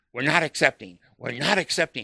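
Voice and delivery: put-on loud obnoxious yelling. Retelling what she yelled at them in a public place, imitating loud, obnoxious yelling. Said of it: "he's yelling just like she's yelling".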